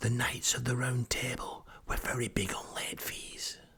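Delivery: hushed, soft, secretive, conspiratorial whisper. Retelling what a retired librarian said: imitating a whisper. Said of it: "who whispers everything".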